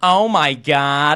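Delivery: put-on slow, loud, stretched-out Valley Girl accent.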